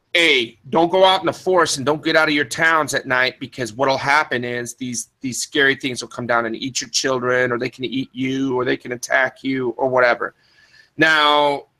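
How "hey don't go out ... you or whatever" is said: plain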